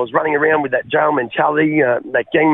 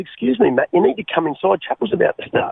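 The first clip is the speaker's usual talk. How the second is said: mock-calm voice, cool as a cucumber; 4 semitones higher than usual. Retelling a woman telling him to come inside while he screamed, imitating a calm voice. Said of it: "cool as a cucumber".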